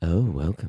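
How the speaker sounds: extra sultry delivery. Podcast co-host retries the show's welcome line, in a sultrier voice. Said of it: "that was sultrier".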